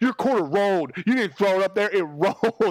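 put-on furious, petulant man's outburst. Retelling a grown man losing twenty dollars rolling quarters: imitating a furious man. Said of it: "a grown man that furious".

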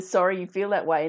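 ordinary talk

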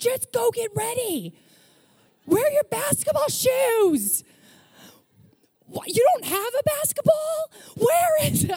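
very high, swooping yelling, losing it. An aunt retelling yelling at an eight-year-old: re-enacting yelling. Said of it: "I'm yelling now".

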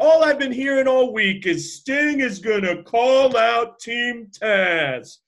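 mocking voice, high and loud. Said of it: "he's kinda mocking".

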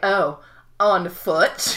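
acted patronizing, talking-down, superior tone. Imitating how Randy asks about going on foot: condescending Randy voice. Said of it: "just the condescension in his voice when he's like".

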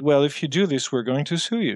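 ordinary talk, nothing marked

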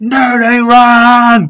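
put-on high, rowdy, drunken party yell, drawn out. Telling how he got up among his peers after drinking, retelling his own yell. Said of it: "I've just started yelling".

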